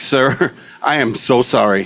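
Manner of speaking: dazed, stunned, shocked, very slow delivery. Retelling apologizing to a patient after an accident: imitating own shocked apology. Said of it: "I'm in shock, you know".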